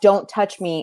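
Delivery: normal talking voice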